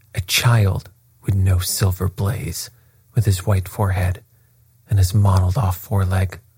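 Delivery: ordinary delivery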